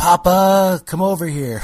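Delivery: put-on high, loud child yell, calling far.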